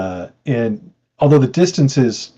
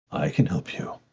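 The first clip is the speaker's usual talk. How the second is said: deep, low-voiced whisper; 8 semitones lower, 10 dB quieter than usual. Narrating to a player calling for help, the speaker voices the answer in a deep whispered voice. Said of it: "you suddenly hear like a deep voice uh, that seems like it's whispered in your mind".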